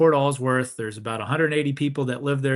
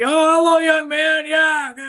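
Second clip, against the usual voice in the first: very high, loud, drawn-out holler; 6 dB louder than usual. Retelling how a hard-of-hearing friend greeted him, imitating a friend yelling. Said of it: "he kind of yells because he can't hear".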